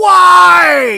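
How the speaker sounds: screaming voice. Retelling screaming at kids walking away: retelling a scream. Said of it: "I'm screaming".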